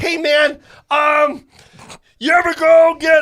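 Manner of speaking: high, loud, drawn-out character voice. Mocking someone who just sits behind the camera, in a Grover voice. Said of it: "I don't know why I'm using this voice".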